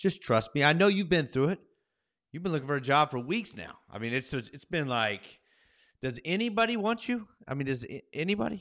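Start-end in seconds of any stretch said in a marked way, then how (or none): 6.0-8.6 playful, pitched-up teasing tone. Teasing the other speaker about weeks of job hunting: teasing, ribbing. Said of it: "you're just ribbing me a little bit".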